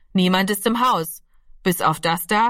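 ordinary delivery

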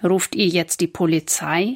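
plain

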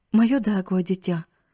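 plain

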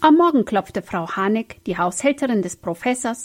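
plain reading voice

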